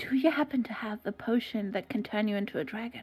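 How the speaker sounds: low, hushed voice. A player character asks the shopkeeper one more question: lowered voice. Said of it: "I lower my voice".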